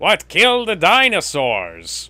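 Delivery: loud, high villain voice yelling.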